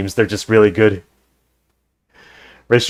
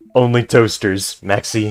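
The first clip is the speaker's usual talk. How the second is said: normal talking voice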